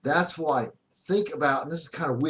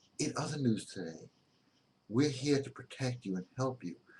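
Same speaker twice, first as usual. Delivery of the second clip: soft, gentle public-radio newsreader voice; 9 dB quieter than usual. Explaining how news broadcasters talk, demonstrating an NPR voice. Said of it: "they use what's called an NPR voice".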